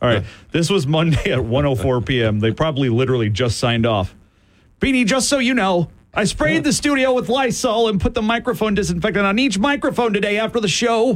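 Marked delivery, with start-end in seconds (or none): 4.8-11.2 mock panicked, hurried, rushed read, pitched up. Reading out Brock's Monday note aloud, imitating Brock's panicked, hurried tone. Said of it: "Brock only communicates in a panicked, hurried tone".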